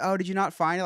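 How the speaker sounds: high, play-acted upbeat sunny cheerful service voice. Retelling what the cashier asked on their return: imitating a cheerful cashier. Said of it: "real cheerful".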